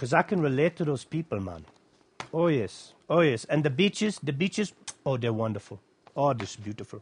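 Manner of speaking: rusty put-on Caribbean accent. Speaker decides to try out an accent mid-talk: rusty caribbean accent. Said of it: "try out my rusty Caribbean accent".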